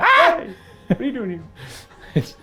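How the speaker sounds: startled, shocked shout in a ghost voice.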